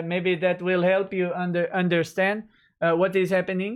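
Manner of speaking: put-on mock French accent. Mockingly addressing a news site based in Quebec: put-on French accent. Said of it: "I shall insult you with a French accent".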